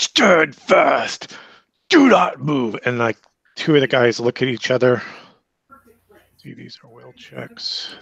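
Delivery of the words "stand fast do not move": very slow, swooping, drawn-out, booming bellow. Narrating a game scene as a character orders the group to halt: Rodolfo's booming voice. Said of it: "Rodolfo booms out".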